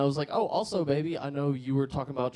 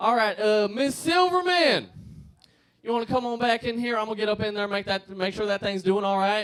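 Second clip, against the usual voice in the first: put-on South Georgia accent, pitched up; 7 semitones higher, 4 dB louder than usual. Retelling what a doctor in South Georgia said: imitating a South Georgia accent. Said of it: "If you talk to me with that accent".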